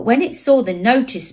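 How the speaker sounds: ordinary delivery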